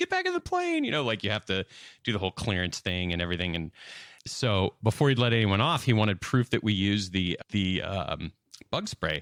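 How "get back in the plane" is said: very high, acted-out screaming. Retelling a customs agent screaming at the passengers, imitating someone screaming. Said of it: "the guy's just screaming at us".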